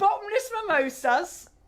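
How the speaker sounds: high-pitched mock Cockney accent.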